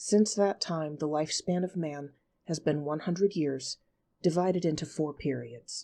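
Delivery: ordinary delivery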